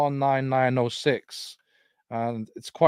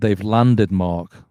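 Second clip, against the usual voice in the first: mimicked radio voice, lower and louder; 4 semitones lower, 8 dB louder than usual. Speaker retelling what came out of the radio while looking at the sky: imitating the radio voice's tone. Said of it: "like that tone".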